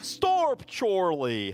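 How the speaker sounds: put-on botched, messed-up British accent. Imitating a sitcom character's messed-up british accent. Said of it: "it's completely messed up".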